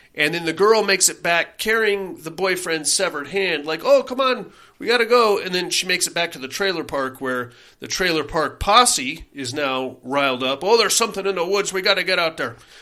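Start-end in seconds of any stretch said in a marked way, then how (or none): 10.7-12.5 fast, terrible put-on Irish accent. Recapping a horror movie, voicing the riled-up trailer park posse; terrible irish accent. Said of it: "That's a terrible Irish accent".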